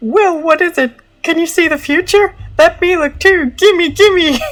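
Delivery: very high, squeaky, silly cartoon dog voice. Trying out voices for the dog heads, giving one a dog voice. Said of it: "a dog voice".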